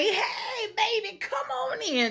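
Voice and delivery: put-on very high, very slow, sweet grandmotherly voice. Retelling how a grandma greeted the kids at the door: imitating a sweet grandma. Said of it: "real sweet grandma".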